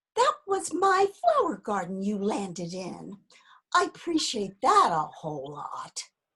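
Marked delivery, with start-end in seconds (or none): 3.8-6.0 dry sarcasm, lower. Speaking to someone who landed in the flower garden: sarcastic. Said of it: "I'm being sarcastic".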